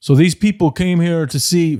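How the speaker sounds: put-on high-pitched Canadian accent. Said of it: "in his, like, Canadian accent".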